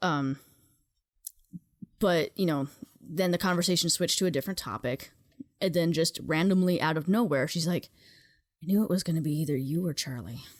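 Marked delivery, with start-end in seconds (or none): 8.6-10.4 put-on mumbling under the breath. Retelling what a woman said at breakfast: imitating someone mumbling to herself. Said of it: "Mumbles it to herself".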